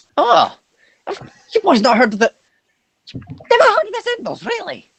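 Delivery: put-on squeezed, strained, high-pitched voice. Playing a character who answers the other players, in a strained character voice. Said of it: "Oh my God, my voice".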